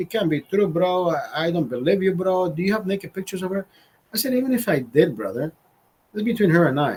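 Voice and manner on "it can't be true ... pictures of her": imitated Indian accent. Retelling a man's reply on learning about the affair, Indian accent. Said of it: "an Indian accent".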